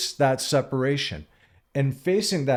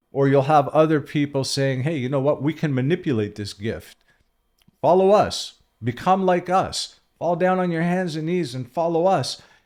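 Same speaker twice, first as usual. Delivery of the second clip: normal talking voice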